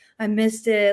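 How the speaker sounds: play-acted sad, dejected, let-down tone. Retelling an interview where he thought he missed the top spot: imitating someone sad. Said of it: "he's all sad".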